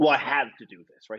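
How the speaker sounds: mock grudging, reluctant, eye-rolling complaining tone. Retelling how reluctant trainees complained: imitating eye-rolling reluctance. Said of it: "really eye-rolly about it".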